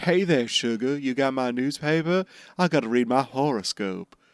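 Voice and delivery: put-on Southern belle voice, American South accent. Recapping the scene where the newspaper bird shows up, Sanji as a Southern belle. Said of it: "Sanji's like a Southern belle".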